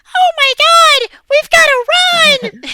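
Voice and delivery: very high, very loud, shrill anime-dub cry. Complaining about anime dub voice actors, doing a high-pitched dub voice. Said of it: "such high pitched voices".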